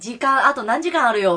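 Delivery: plain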